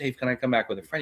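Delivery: scared, hushed, rushed, frightened pleading voice. Retelling a friend asking Dave if he can come back: imitating a scared friend. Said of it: "He was so scared".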